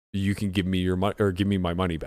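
normal talking voice

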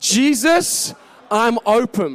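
firm, believing, said with conviction. Leading listeners with arms raised in a prayer line: said with conviction. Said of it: "Now say it with conviction".

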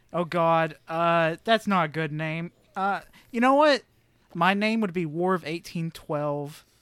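ordinary delivery

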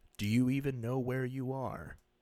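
flat television narrator voice. Retelling a TV spot's narration, imitating Jordan Peele's monotone delivery. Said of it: "he's doing the monotone delivery".

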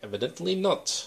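put-on German accent. Retelling a movie scene by Hugo Weaving, in his German accent. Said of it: "in his German accent".

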